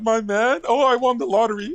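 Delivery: mock over-the-moon squeal of delight, very high. Mocking another speaker's reaction to "my man": mock excited imitation. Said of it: "Look how excited you got".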